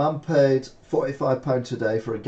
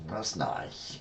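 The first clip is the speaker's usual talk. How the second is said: dry, mocking, sarcastic, breathy delivery; 6 semitones lower, 11 dB quieter than usual. Reacting to a shown girlfriend picture, sarcastic "that's nice". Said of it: "I do say that's nice when I'm being sarcastic".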